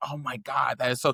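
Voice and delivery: tearful, crying voice. Retelling crying in bed after being called a slur: imitating own past crying. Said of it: "in the bed crying".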